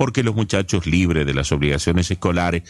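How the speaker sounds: ordinary delivery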